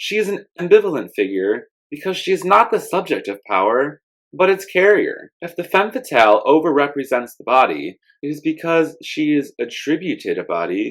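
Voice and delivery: normal talking voice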